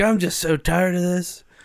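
put-on grumpy, high-pitched crotchety old man voice. Acting out an old crotchety guy in a bar fight: crotchety old guy voice. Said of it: "old crotchety old guy".

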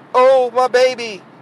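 acted, high, whining, lamenting voice. Criticising the mother of a boy who beat a teacher, the speaker mimics her: mock whining mother. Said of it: "the mom is whining like".

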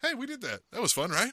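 calm, casual, easygoing neighborly tone. Retelling how Nick Foles talked before the Super Bowl: calm, casual Nick Foles impression. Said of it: "came in like he was just your neighbor".

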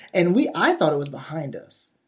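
ordinary talk, nothing marked

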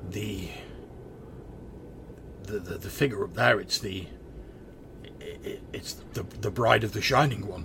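voice entirely in awe. Game master voices a player's sword seeing the figure above, awed voice. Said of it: "the voice sounds like it's entirely in awe".

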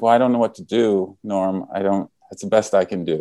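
normal talking voice

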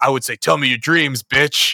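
put-on creepy voice. Recapping a scene, quoting a man's answer to the psychiatrist, retelling his creepy voice. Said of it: "he like has this creepy voice".

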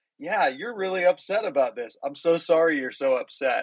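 put-on smiling voice. Retelling answering a driver who yelled at them, retelling a smiling reply. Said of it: "I just looked at him and I smiled".

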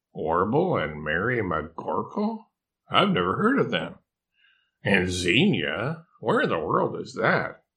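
ordinary delivery

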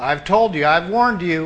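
ordinary talk

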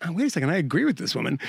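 plain

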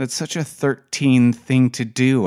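plain reading voice

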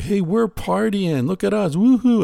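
rowdy, very high-pitched, whooping party yell. Complaining about Americans partying, imitating them yelling. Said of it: "Americans yell yoo-hoo a lot".

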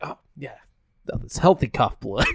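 put-on deadpan, breathy, straight and thrown away. Retelling a funny movie scene, imitating a deadpan line. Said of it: "the deadpan".

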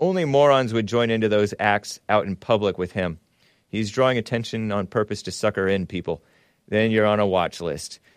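ordinary delivery

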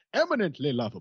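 put-on fancy British butler accent. Quoting how a fancy butler would say it, the speaker uses Jeffrey's posh British accent. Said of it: "exactly the way he and his fancy, inexplicably British butler would have said it".

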